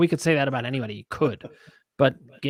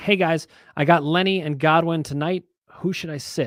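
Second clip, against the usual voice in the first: ordinary delivery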